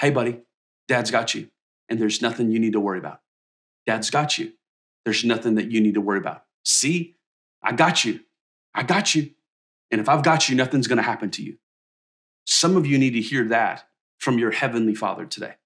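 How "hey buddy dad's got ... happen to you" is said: hushed, gentle half-whisper. Retelling words said to a child being lifted up: imitating own half-whisper. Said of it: "I'll whisper to him".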